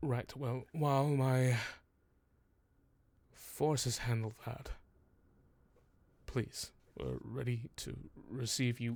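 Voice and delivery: soft, worn-out, bone-weary exhausted voice. Narrating a game, the speaker voices Lord Harvell leaning down, tired and weary. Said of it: "just sighs deeply, just so tired".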